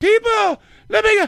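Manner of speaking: high excited put-on voice. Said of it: "the high one where he's trying to get people riled up".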